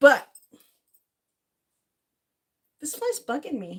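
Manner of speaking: kind of whiny, swooping grumble. Complaining aloud about a fly, whiny. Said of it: "that sounded kind of whiny".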